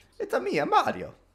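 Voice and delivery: very high, laughing character voice.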